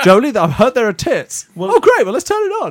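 very high put-on woman voice. Describing how his wife would react, he does an impression: imitating his wife. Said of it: "That's my impression of my wife".

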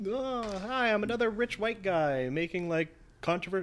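high, mock, dumb, snarky rich guy voice.

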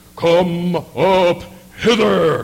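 mighty, booming heavenly voice, very loud. Retelling a scripture passage, voicing the call from heaven: great voice from heaven. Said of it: "a great voice from heaven".

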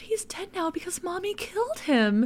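put-on very high, tipsy, tender, loving tone. Retelling a movie mother's line: imitating Marge, drunk and loving. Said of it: "kind of drunk and in, like, a really loving voice".

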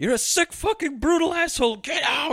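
shrill, very high, furious breaking-point screaming. Retelling a scene where a woman screams at a man: imitating someone screaming. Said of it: "She's screaming at him".

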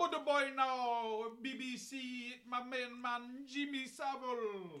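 slow, put-on Jamaican accent. Imitating the other speaker's old way of talking: imitating a jamaican accent. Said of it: "That's exactly how you sounded".

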